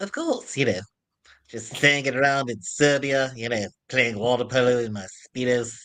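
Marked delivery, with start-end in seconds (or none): 1.5-5.9 put-on cartoon baby voice. Performing a voice again after another speaker asks for it: Stewie voice. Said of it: "can you do the Stewie one".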